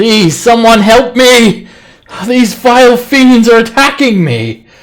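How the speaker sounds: shrill, very high, full-volume cry. Voicing someone hiding in a destroyed building, crying out for help. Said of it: "someone just crying for help".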